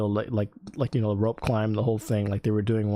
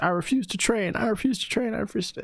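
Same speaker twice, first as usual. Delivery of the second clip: screaming, higher pitch; 11 semitones higher than usual. Retelling a recruit's protest during training: imitating someone screaming. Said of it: "he just started screaming at the top of his lungs".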